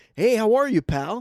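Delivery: very loud, high, folksy Midwestern accent.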